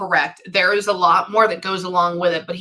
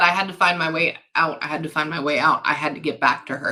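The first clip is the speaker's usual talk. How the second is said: ordinary talk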